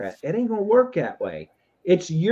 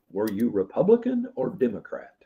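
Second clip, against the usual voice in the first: low, hushed, deep, soft put-on voice; 6 semitones lower, 5 dB quieter than usual. Describing judgment day, the speaker quotes what God will ask: God voice. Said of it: "Is that your God voice?".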